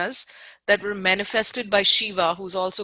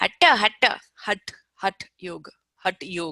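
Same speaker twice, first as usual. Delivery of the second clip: Indian-accented pronunciation. Explaining to listeners how Hatha is pronounced, use an Indian accent pronunciation. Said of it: "when you think of Indian accent".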